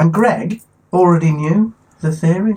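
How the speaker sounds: shocked-sounding voice. Remarking to another speaker that he already knew the theory: sounding shocked. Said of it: "Why do you sound so shocked?".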